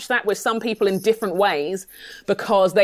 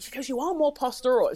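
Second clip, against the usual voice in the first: hushed, secretive half-whisper; 3 semitones higher, 5 dB quieter than usual. Retelling what a friend says like a secret: imitating a half-whisper. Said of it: "She kinda whispers it like it's a secret".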